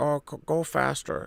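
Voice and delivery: very slow, breathy, hushed murmur. Retelling how the director gave actors notes: George Lucas impression. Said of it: "That was a great impression".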